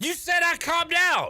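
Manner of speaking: outraged, high, stretched-out screaming. Arguing with another speaker on the radio, screaming. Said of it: "Why are you screaming?".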